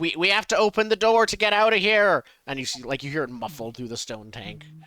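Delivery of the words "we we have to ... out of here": high-pitched, very loud shout. Calling from inside a stone tank for someone to open the door: yelling. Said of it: "I yell out".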